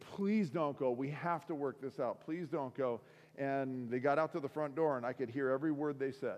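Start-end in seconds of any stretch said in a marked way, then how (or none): none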